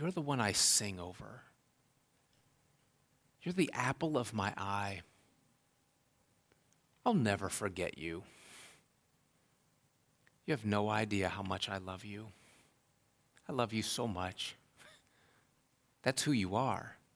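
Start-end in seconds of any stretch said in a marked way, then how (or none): 0.0-14.6 acted-out whisper, quieter. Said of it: "He whispers".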